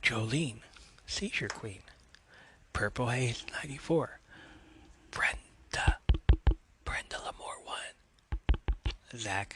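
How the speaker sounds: soft, whispered ASMR-style voice. Reading out a list of names ASMR-style as someone requested, whispering. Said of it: "I'm gonna whisper these names".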